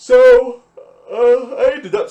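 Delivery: very high, very loud, drawn-out words through a yawn. Answering a question mid-explanation, the speaker breaks into a yawn: yawning. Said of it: "Sorry, I'm yawning".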